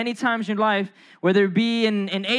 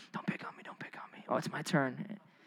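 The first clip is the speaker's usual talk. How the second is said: anxious, whispered, under-the-breath nervous pleading tone; 8 semitones lower, 17 dB quieter than usual. Retelling being picked to read aloud in high school: imitating own past nervous self. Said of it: "I was sweating bullets".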